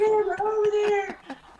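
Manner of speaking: high, slow yell. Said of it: "I'm basically yelling".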